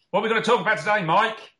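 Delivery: loud shouting, pitched very high. Asking the co-host what today's topic is: shouting. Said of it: "there's no need to shout".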